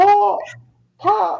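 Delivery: put-on failed British accent. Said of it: "I can't do a British accent".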